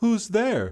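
sweet calling voice, way up high. Hearing someone at her window, Elsa calls out sweetly. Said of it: "she called out sweetly".

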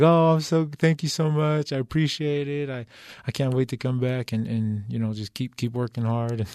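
tone suddenly flipping to grateful. Retelling own reply to the GM's call-back, imitating own flipped grateful tone. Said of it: "And my tone flipped".

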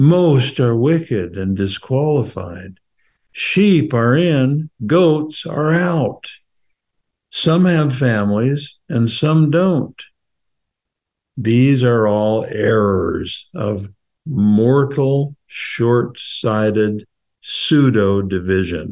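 slow, thoughtful recitation. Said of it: "we're gonna try to read it slowly".

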